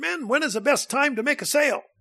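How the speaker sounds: squeaky, very high-pitched voice. Retelling a question from his old sales manager, in a high-pitched voice. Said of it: "real high-pitched voice".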